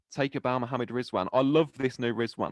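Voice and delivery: ordinary talk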